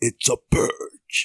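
attempted deep voice. Announcing the day's topic to the audience, the speaker is trying to sound deep. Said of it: "He always tries to go deep".

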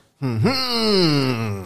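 blast-like wailing sound.

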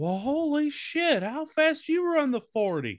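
put-on old-man voice, pitched very high. Retelling Geronimo's reaction, the speaker does a Herbert from Family Guy voice. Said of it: "why do you sound like the old guy from Family Guy".

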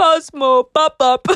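put-on thick, broad, heavy Scottish accent. Retelling a roommate's reenactment of the neighbor calling cosmo: heavy scottish accent. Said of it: "with our neighbor's like really heavy Scottish accent".

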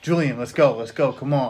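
negative, pushy, impatient hurrying tone. A parent shows the attitude they'd use hurrying their child Julian: negative, pushy attitude. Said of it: "like this attitude".

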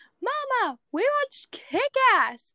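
acted-out, very high, swooping young child yell. Retelling telling Mama at age five about the movie: imitating own childhood yell. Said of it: "I yelled".

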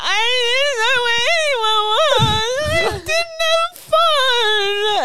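high, loud blubbering teary sobbing, fun drawn out. Retelling being found by the group after getting lost, imitating crying while talking. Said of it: "and I'm crying".

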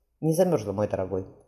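ordinary delivery

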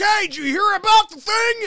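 shrill, booming, way-too-loud high-pitched voice. Imitating a steel mill worker in a quiet office: imitating someone talking too loud. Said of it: "Just calm down, bro".

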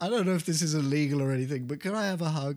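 sheepish, hopeful, high-pitched and fast.

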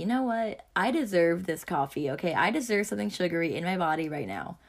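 ordinary talk

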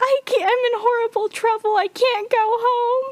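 very high sobbing, tearful pleading, word "home" stretched out. Retelling a show scene of a girl outside a house: imitating crying. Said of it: "She's crying".

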